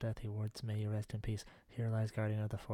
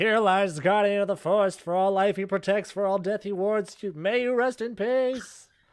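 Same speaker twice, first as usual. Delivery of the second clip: very loud, high, ceremonial proclaiming voice; 11 semitones higher, 15 dB louder than usual. Speaker acts out a proclamation they announce, very loud proclamation. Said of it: "I'm gonna like speak in a very loud tone".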